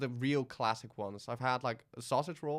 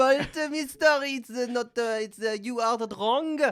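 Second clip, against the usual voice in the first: put-on clumsy French accent, very high, shrill, very loud; 11 semitones higher, 11 dB louder than usual. Retelling a french person blaming him for a wrong order: bad french accent. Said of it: "I can't do the accent".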